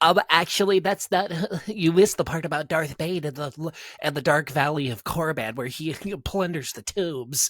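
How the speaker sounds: loud, high, mocking pedantic know-it-all voice. Correcting someone about Darth Bane in a put-on mocking know-it-all voice. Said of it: "It's the best mocking voice".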